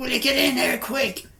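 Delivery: mock, very high-pitched yelled shout. Retelling how everybody shouted at the sergeant to come in: imitating people shouting. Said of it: "starts shouting".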